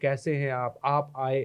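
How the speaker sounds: put-on old-school stage-style slow motion, soft and low. Describing old-school film acting, imitating a good character talking in slow motion. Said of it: "वो slow motion में बोल बाल रहा है".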